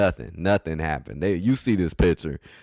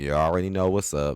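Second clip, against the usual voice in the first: usual speaking voice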